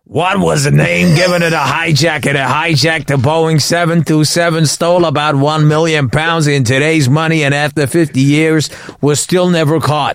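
put-on text-to-speech voice. Showing another speaker the other TikTok voice on a quiz question: TikTok voice. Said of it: "That voice".

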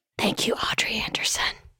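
ASMR whisper. Reading out patron shout-outs asmr style: whispering. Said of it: "so I'm gonna whisper your name".

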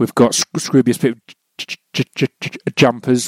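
stammering and tripping over words. Listing merchandise for sale, stuttering. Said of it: "I'm stuttering a lot today".

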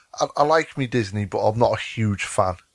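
ordinary talk, nothing marked

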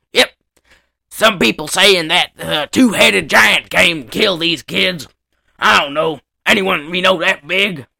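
put-on big Southern sheriff voice with Southern accent. Retelling what the sheriff says in a story: southern sheriff voice. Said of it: "He's like this big fat southern guy".

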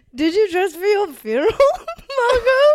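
slow, high delivery, words breaking up with laughter. Acting out a line in a scene, laughing while talking. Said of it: "I can't get the tone on this 'cause I'm laughing".

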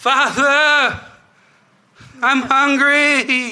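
very high, drawn-out crying out. Voicing a voice from under the floorboards: crying out. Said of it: "a voice cry out".

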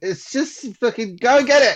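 very high-pitched, loud yelling outburst. Acting out a character in a pitched flashback scene, shouting. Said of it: "you don't have to shout".

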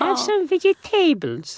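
very high, lilting, swooping sing-song woman's voice. Recalling how a woman named Maria spoke, imitating Maria's speech. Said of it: "So that's how she spoke".

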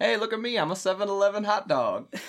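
high, loud, goofy show-off put-on voice.

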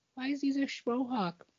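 put-on tiny, very high, quiet little-kid voice. Retelling the question a little kid asks from the car: little kid voice. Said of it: "you just hear this little kid voice".

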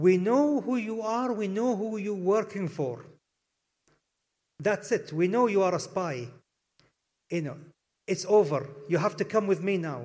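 mock sinister, very menacing, threatening tone. Retelling what someone said with a pistol at the speaker's spine: retelling a menacing tone. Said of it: "said in a very menacing tone".

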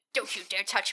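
brooding, broody guy voice. Acting out a broody guy after a bump: broody guy voice. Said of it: "the broody guy's like".

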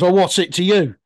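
play-acted, snippy, challenging, full of attitude. Retelling a film scene where Brody turns on someone: imitating someone with attitude. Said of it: "with a proper attitude to him".

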